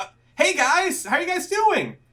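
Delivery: put-on high, loud, cheerful, friendly girl's voice. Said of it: "you hear a familiar voice go".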